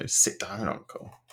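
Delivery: mock curt, stinging, waspish, snappy tone. Acting out a girl addressing her uncle, mock-waspish. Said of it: "being like waspishly".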